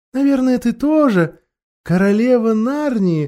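lightly pitched, teasing, mocking yet tender voice. A witch questions a girl, mocking and tender. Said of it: "насмешливо и ласково спросила колдунья".

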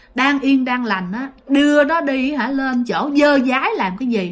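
plain

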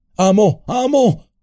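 very high-pitched, alarmed shouting. Sam calls down to Frodo after he falls into the abyss, shouting. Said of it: "gritó".

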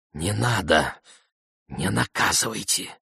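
whispering. Narrator reads Zarina's reply to Zukhursho: whispered. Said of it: "прошептала Зарина".

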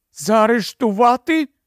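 frightened gasp. A woman told she cannot be arrested gasps, frightened. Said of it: "перелякано ахнула вона".

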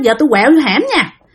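plain

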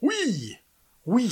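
very high, shrill shouted cry in unison. The whole assembly answers the call to stop obeying their officers: cried out in unison. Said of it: "s'écria toute l'assemblée d'une commune voix".

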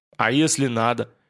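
ordinary delivery

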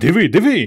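crying out, exclaiming. Petro, beside Ivan, as something happens to the apparatus: cried out. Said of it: "скрикнув Петро".

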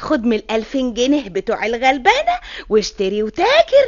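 plain reading voice

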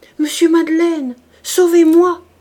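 high-pitched, very loud anguished cry. Hiding her face in both hands, a woman cries out in anguish. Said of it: "cria avec angoisse".

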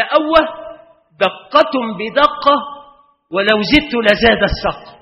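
loud indignant outcry.

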